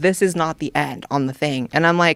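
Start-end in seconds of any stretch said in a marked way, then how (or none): none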